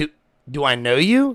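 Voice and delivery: mock-confused tone. Retelling a stranger yelling his nickname at him: retelling own confusion. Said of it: "I instantly get confused".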